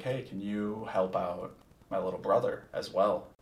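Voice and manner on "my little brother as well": ordinary talk, nothing marked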